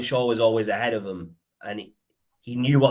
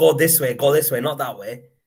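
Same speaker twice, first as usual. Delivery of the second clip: loud, shouted voice; 4 semitones higher, 4 dB louder than usual. Retelling shouting at the players during a match: imitating someone shouting. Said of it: "I was shouting at the players".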